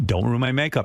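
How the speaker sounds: plain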